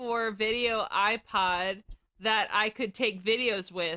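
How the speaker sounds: ordinary delivery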